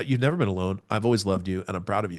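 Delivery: ordinary delivery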